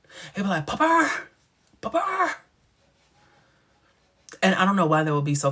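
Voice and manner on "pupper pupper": very high, acted-out screaming. You act out how he would say her name wrong, imitating him screaming a name. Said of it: "when he would scream her name".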